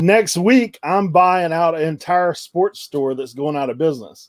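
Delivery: ordinary delivery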